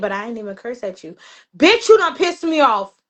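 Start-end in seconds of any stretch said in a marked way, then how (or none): 0.0-1.2 put-on very calm voice, quieter, lower. Speaker acts out her baby daddy answering her, imitating a very calm voice. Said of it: "He'll in the calmest voice he'll say".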